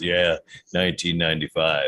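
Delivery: deep voice. Imitating a drive-through worker's reply when someone orders, in a deep voice. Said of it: "a sweet voice that says".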